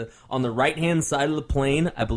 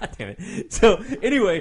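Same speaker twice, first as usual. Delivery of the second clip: ordinary talk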